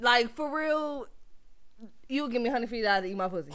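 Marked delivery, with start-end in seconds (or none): none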